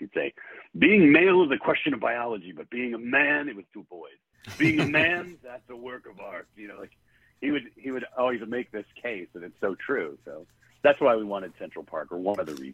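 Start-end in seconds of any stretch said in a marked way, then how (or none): 0.8-6.5 mock booming bellow, pitched high. Retelling what an old teaching mentor bellowed to his class: booming voice. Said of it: "He had a booming voice".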